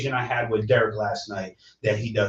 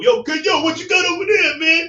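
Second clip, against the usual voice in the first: very high, loud, brash shout; 7 dB louder than usual. Retelling a second inmate scaring a kid: imitating Crazy Larry. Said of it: "Crazy Larry comes over".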